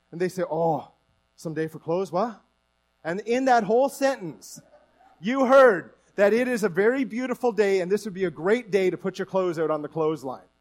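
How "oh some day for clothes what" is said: put-on Newfoundland accent. Explaining local speech, quoting someone's reply in a newfoundland accent. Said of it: "do the Newfie accent right".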